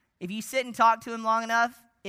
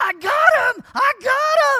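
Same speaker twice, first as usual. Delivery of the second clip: triumphant yell, very loud, high and drawn out; 11 dB louder than usual. Retelling the scene where Luke hits a TIE fighter, the speaker acts out Luke's yell. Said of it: "he yells up at Han".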